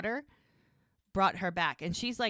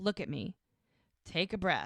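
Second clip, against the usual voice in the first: ordinary delivery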